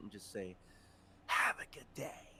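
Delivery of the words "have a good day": put-on slow, whispered snake voice, English accent dropped. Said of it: "use her Yuan-ti voice and, like, drop the English accent".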